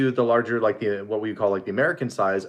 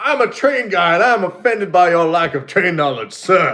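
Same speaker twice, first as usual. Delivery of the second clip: raised, put-on Southern accent; 7 semitones higher, 8 dB louder than usual. Imitating an offended train guy from the south: imitating a southern train guy. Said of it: "in the Florida Panhandle or something".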